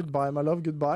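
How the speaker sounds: ordinary delivery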